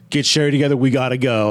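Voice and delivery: ordinary talk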